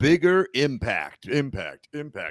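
hyped-up monster truck rally arena announcer call. Podcast host introducing a segment name, in a monster truck rally announcer voice. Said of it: "voice that like it was a monster truck rally".

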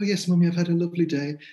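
put-on high, sweet, prim, well-mannered little girl voice. Speaker imitates their kid speaking English, imitating a sweet gracious child. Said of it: "She's this fey, quicksilver, gracious, lovely".

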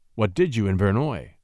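ordinary talk

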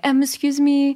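French-accented broken English. Showing how she speaks bad English in France: imitating a French accent. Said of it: "If I'm in France, and I'll speak English".

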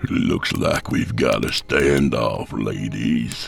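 very low, rough, slow drawn-out growl. Vance speaks during an armed standoff, growling. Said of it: "Vance growled".

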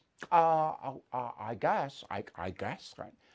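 mocking impression. Speaker talks about a congresswoman, doing a mocking imitation of her. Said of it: "I'm mocking her".

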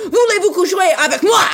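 very high, angry-sounding speech in French. Imagining answering someone in french: mock angry french line. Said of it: "I just said it angrily".

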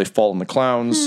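ordinary talk

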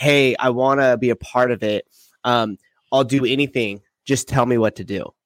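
plain

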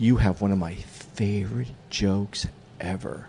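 hushed, slow, secretive and conspiratorial tone. Retelling what a woman at a show said: imitating a woman speaking quietly. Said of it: "she gets really quiet".

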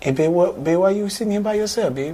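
put-on sweet Louisiana accent. Speaker retells a woman who sat down at his table; sweet Louisiana accent. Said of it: "she has this sweet accent".

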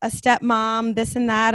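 normal talking voice

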